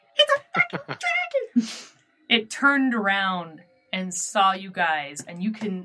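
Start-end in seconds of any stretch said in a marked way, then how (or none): 0.2-1.7 tiny squeaky voice, much higher. Narrator voices a speaker that the jackrabbit hears, in a tiny squeaky voice. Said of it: "this tiny squeaky voice go".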